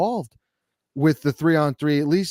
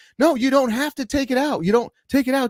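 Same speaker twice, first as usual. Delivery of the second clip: play-acted, very high-pitched screaming; 10 semitones higher than usual. Retelling what he screamed at a player during a three-on-three game, retelling a scream. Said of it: "I'm sitting there screaming at him".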